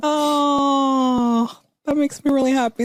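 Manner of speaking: choked-up, high emotional voice, long drawn-out "oh". Responding to a friend's happy news, getting emotional. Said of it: "Sorry, I'm getting really emotional".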